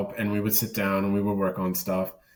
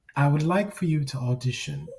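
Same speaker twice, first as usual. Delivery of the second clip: put-on high, light, dainty little British accent; 6 semitones higher than usual. Retelling how she came up and asked for an audition, in her little British accent. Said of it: "her little British accent, she goes".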